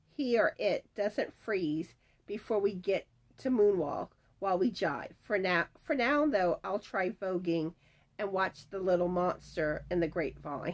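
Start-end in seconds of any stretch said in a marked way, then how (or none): none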